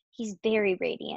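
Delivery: ordinary delivery, nothing marked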